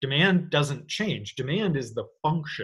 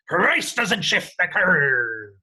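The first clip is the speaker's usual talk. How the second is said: put-on pirate captain voice, loud and slow; 4 semitones higher, 6 dB louder than usual. Demonstrating a phrase for listeners to repeat, in a good pirate voice. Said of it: "you've got to get a good pirate voice in there".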